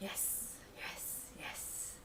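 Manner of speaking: yes, whispered softly.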